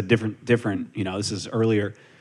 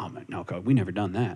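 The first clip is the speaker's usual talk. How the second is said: quiet deadpan voice with no reaction; 3 semitones lower, 6 dB quieter than usual. Speaker retells how a man answered his question, retelling a deadpan answer. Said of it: "looks at me, deadpan".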